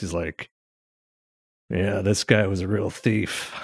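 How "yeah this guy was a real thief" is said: put-on low growly voice, quieter. Answering a request for an impression of Michael Mann: low growly voice. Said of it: "low growly voice".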